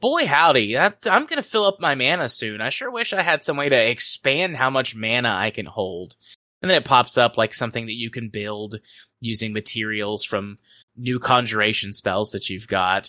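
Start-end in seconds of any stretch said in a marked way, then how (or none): 0.0-6.2 swooping, sarcastic sing-song. Retelling an in-game message: imitating a sarcastic message. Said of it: "sarcastic message that's like".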